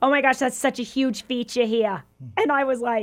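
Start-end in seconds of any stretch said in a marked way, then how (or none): 0.0-2.0 put-on New York accent. Retelling a woman's remark, in a new york accent. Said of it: "a little like New York Eastern accent".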